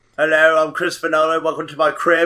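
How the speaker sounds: put-on British accent. Joining a joke about a director: Christopher Nolan British accent. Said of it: "I'm Christopher Nolan with my British accent".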